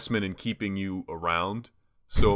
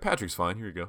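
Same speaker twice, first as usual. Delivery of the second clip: mock pointed, passive-aggressive tone; 5 dB quieter than usual. Retelling the usual reply to a nickname: retelling a passive-aggressive correction. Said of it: "very passive aggressive".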